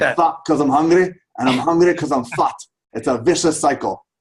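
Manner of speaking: put-on Scottish brogue, loud and high. Quoting a nutrition expert's line again: Fat Bastard Scottish brogue. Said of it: "But he said it with a Scottish brogue".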